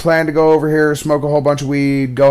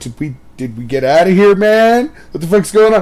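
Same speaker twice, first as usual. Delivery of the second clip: put-on nervous, panicked voice, higher pitch; 5 semitones higher than usual. Retelling friends' reaction after the cop drove off: imitating freaked-out friends. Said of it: "they're kind of freaking out".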